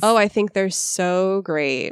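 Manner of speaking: dry, deadpan, low, flat, slow sarcasm. Demonstrating a sarcastic response to a question, sarcastic, lowered, flat and slower. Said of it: "when I make a sarcastic response, I lower my voice, I flatten my voice, and I speak slower".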